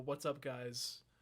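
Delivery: delivery broken up by dramatic pauses. Redoing one's own show intro greeting: imitating own dramatic pauses. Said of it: "with the dramatic pauses and everything".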